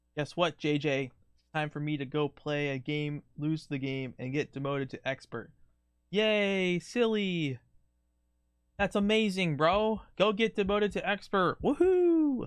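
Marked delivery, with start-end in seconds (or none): 6.1-12.5 sarcastic put-on enthusiasm, high fake cheer. Cheering on a friend who plans to lose and get demoted: sarcastic fake cheering. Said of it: "That was sarcasm".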